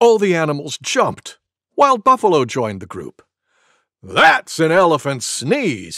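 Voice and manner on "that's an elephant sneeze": proud, higher and louder. The buffalo joins the animals after the sneeze and speaks up, proudly. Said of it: "he said proudly".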